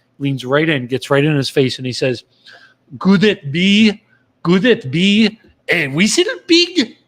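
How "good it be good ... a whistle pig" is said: put-on thick French accent, very slow and drawn out. Retelling a man's remark to another man, in a heavy French accent. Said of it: "in a very heavy French accent".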